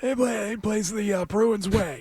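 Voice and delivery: very slow speech with every word dragged out. Imitate how a man will talk about the Bruins way, in a John Henry-like impression. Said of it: "kind of close to each other, imitation-wise".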